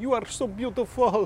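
put-on Italian or Turkish accent, very high. Quoting the comments some people leave under Instagram photos, in a put-on foreign accent. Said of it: "I'm doing that accent".

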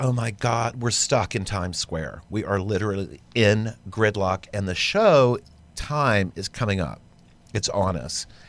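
ordinary talk

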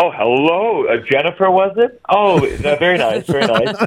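put-on feigned ignorance. Retelling own reply to J-Lo on set: imitating own feigned ignorance. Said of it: "you all play the game where you go".

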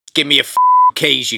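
put-on English accent. Acting out a line in the pleasant English tone just mentioned: English tone like Ben Kingsley in Sexy Beast. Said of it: "that tone".

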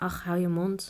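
ordinary delivery

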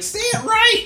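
screaming. Retelling how Carlos yelled at the movie screen: imitating Carlos screaming. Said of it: "just starts screaming at the screen".

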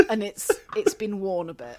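plain

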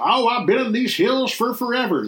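put-on old prospector voice. Describing people in the West, in an old prospector voice. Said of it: "That's me trying to do an old prospector voice".

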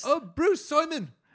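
attempted New Zealand accent. Imagining university people finding the podcast, doing a put-on kiwi accent. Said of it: "I can't really do a Kiwi accent".

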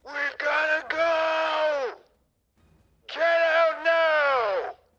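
screaming at full volume. In a scene where reality is failing, screaming at the top of lungs. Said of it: "I'm going to scream at the top of my lungs".

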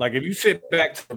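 ordinary talk

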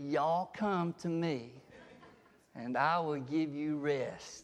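slow, drawn-out Southern accent drawl. Speaker showing how the quoted words would sound spoken a certain way: southern drawl. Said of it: "he did not speak with a southern drawl".

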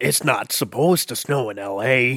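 put-on Irish speaker doing an American accent. Retrying the bit after another speaker's critique: Liam Neeson doing American accent. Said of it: "sounds like an Irish person trying to do an American accent".

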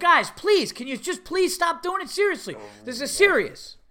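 play-acted exasperated, annoyed pleading, swooping high. Retelling a man getting annoyed with kids kicking up dirt, retelling annoyed pleading. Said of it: "This guy's getting annoyed with the kids".

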